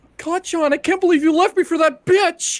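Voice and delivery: very high, shrill, very loud voice. Performing a requested line as the character Deku: Deku dub voice impression. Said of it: "I'm trying to think of his dub voice".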